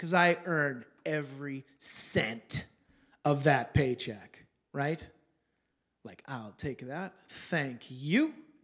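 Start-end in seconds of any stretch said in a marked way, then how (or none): 6.3-8.3 put-on entitled tone, as if owed. Retelling picking up a hard-earned paycheck: imitating own entitled thank-you. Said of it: "That was me feeling entitled".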